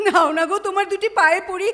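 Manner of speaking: desperate, pleading crying voice. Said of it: "চিৎকার করছো কেন".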